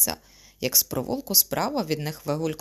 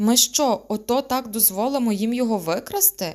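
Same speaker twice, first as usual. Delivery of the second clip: outraged, indignant, pitched-up exclamation; 7 semitones higher, 4 dB louder than usual. A girl speaks to the werewolf as a man is dragged away; indignant exclamation. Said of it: "обурено вигукнула до вовкулаки".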